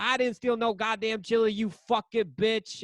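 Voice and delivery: indignant, mild, high-pitched angry half-yell. Retelling a bar fight where a man denies stealing chili: imitating someone screaming. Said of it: "he's screaming".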